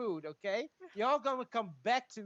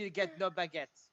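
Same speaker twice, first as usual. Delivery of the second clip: irritating, annoying put-on French accent; 5 semitones lower than usual. Playing a character leaving with the food: annoying French voice. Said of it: "I say it in a French annoying voice".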